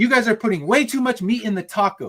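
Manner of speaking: acted-out, high, scolding yell. Retelling how the manager came in and scolded them, imitating a manager yelling. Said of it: "starts yelling at us like".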